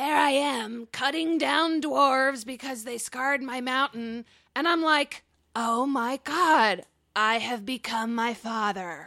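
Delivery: put-on skeleton character voice. Reading a phrase aloud in a game with a voice modifier: skeleton voice. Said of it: "In a skeleton voice".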